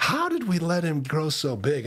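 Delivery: scornful mocking sing-song scoff, pitched high. Retelling how Isaiah speaks of the enemy: imitating a mocking tone. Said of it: "he's kinda mocking".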